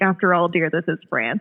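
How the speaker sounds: ordinary talk, nothing marked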